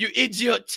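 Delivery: put-on French-accented voice. Repeating a woman's line from a clip: imitating her French accent. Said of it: "her French accent".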